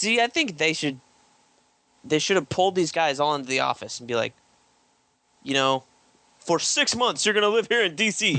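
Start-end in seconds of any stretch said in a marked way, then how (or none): 5.4-8.3 pitched-up, firm, commanding executive-style voice. Imitating an editor telling artists to live in the office: Dan DiDio impersonation. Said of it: "This is my Dan DiDio impersonation".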